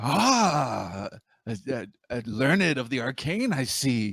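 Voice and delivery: goblin-like shopkeeper voice with drawn-out ah. A shopkeeper answers an adventurer asking what he has, in a goblin-like voice. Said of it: "Sounds like a goblin".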